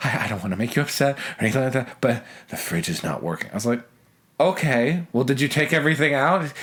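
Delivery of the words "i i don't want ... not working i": aghast, really horrified voice. Quoting the listener's phone call back to them, imitating a horrified voice. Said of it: "you called me in this really horrified voice".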